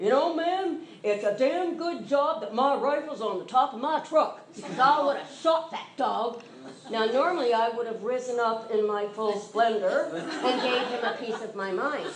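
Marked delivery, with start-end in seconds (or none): 0.0-6.4 mock-authoritarian, commanding man's voice. Retelling what a man said after the dog startled him, mimicking an authoritarian voice. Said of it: "this very authoritarian voice said".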